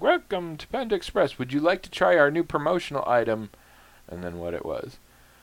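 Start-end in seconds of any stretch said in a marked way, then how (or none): 0.0-3.5 machine-like, pitched-up automated drive-thru announcement voice. Retelling a drive-thru visit, imitating the automated voice that answered. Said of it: "a clearly automated voice is like".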